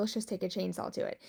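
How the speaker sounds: usual speaking voice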